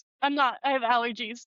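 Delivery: ordinary talk, nothing marked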